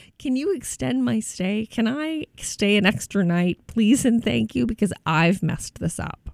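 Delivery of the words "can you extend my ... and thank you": very nice, sweet, polite customer service voice. Showing how to ask a hotel for an extra night: best customer service voice. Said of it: "using your best customer service voice".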